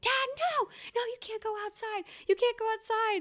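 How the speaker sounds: put-on, very high, sobbing, shrieking hysterical panic. Retelling a brother's outburst when their dad went outside, imitating hysterical crying screams. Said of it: "has a hysterical crying fit and is screaming".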